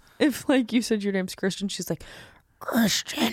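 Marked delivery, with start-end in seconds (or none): 2.6-3.3 eerie, demonic voice. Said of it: "she says it in a demonic voice".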